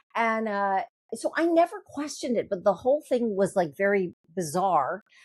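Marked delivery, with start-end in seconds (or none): none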